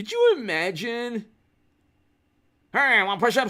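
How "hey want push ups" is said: put-on loud, slurred, garbled, mumbling half-bark. Mocking a politician's speech, imitating slurred mumbling speech. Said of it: "slurring his speech and, like, just mumbling".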